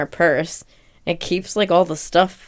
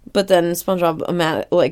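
normal talking voice

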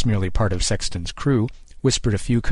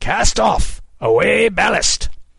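hoarse, rough bellow, very high pitch; 12 semitones higher, 5 dB louder than usual. Narrator reads a character turning to order the sailors, bellowing. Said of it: "He turned and bellowed".

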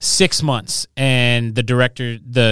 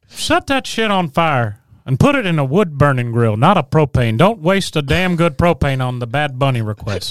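swooping, animated cartoon voice with wide pitch swings; 3 semitones higher than usual. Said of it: "Hank Hill taking a [name] request".

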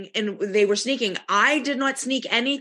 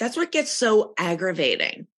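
ordinary delivery

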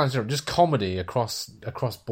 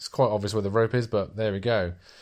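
ordinary delivery

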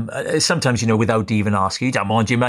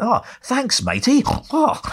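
full-on comic voice, squeaky, very high; 14 semitones higher than usual. Retelling a street meeting, imitating Rik Mayall's reply: imitating Rik Mayall. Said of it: "he gave it full Rik Mayall".

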